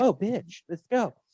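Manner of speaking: plain, unscary everyday speaking voice. Comparing the dropped-out voice with the usual one: Robert Englund's unscary normal voice. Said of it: "sometimes it's just Robert Englund's voice".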